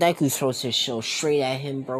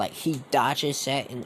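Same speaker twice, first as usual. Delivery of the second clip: normal talking voice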